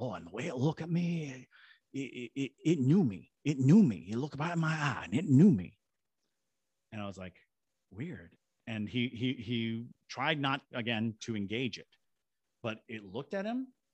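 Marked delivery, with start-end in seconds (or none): 0.0-5.8 put-on slight, lightly done Cajun accent, raised voice. Quoting a man, the speaker uses a light Cajun accent. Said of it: "he had like a light Cajun accent".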